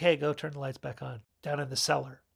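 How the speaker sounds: plain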